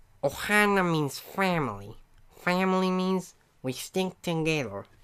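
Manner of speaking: high cartoon alien voice. Showing off voice impressions for viewers, doing a Stitch voice. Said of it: "good Stitch voice".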